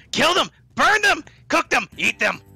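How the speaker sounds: screaming. Player voicing a voice, not the doctor's, that everyone hears, screaming. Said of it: "y'all heard that screaming in your head".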